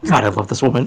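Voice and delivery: soft, private half-whisper, as if to oneself. Voicing a character half-whispering to himself after an order: half-whispering to himself. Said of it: "He just whispers to himself".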